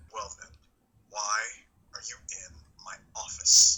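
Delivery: deep, serious cartoonish voice. Acting out a reply in a retold office scene, low serious Ralph Bighead voice. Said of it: "that low serious voice that he used for Ralph Bighead".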